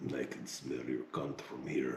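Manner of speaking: put-on Arabic accent. Retelling a man on the radio talking to a woman on a ship: imitating an arabic accent. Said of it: "guy with a uh, Arabic accent".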